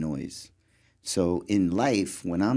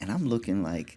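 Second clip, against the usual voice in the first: ordinary talk, nothing marked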